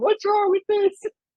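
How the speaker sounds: put-on very high-pitched small child voice. Retelling being scolded over Halloween nails: imitating own child self. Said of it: "as, like, a little kid going".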